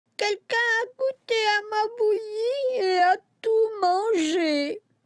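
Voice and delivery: tiny, high whimpering voice, mangé drawn out. Reading the story aloud, the narrator voices Baby Bear in his tiny whimpering voice. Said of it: "pleurnicha Bébé Ours de sa toute petite voix".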